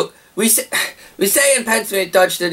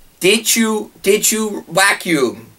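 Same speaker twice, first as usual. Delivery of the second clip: slow, nagging, put-on Dutch accent. Speaker quoting what a woman says to them, in a put-on Dutch accent. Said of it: "Does she have a Dutch accent now too?".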